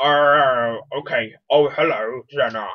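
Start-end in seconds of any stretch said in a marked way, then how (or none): 1.5-2.7 put-on old person voice. Reading the Grandpa part aloud, greeting Xena, in an old Grandpa voice. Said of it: "Grandpa, maybe a little bit old voice?".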